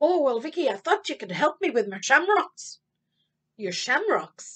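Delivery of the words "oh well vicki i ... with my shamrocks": put-on leprechaun voice. Playing the leprechaun answering Vicki's question, in Shamus the leprechaun voice. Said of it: "Mr. Leprechaun, Shamus".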